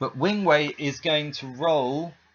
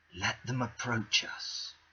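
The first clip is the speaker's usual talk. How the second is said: very soft, hushed whisper; 4 semitones lower, 9 dB quieter than usual. Voicing a character who whispers to the party: whispering in character. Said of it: "he's just gonna whisper to you guys".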